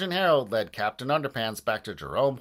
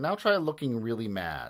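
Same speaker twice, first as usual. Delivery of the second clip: ordinary delivery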